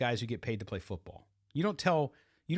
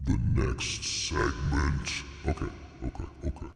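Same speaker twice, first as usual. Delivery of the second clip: villainous put-on voice, rough and creaky; 11 semitones lower than usual. Podcast host returning alone from a break, in an evil voice. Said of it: "we had to put on the evil voice there".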